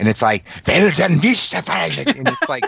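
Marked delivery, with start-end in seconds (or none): 0.7-2.2 put-on terrifying German accent, pitched high. Acting out a German speaker's friendly greeting: imitating an imposing, terrifying German speaker. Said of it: "they sound, like, imposing and, and terrifying".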